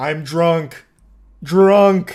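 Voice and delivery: blunt, loud caveman voice, single word. Retelling a drunk driver insisting he only drank two beers, imitating Wayne as a caveman. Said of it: "Speaking like a caveman with like one word".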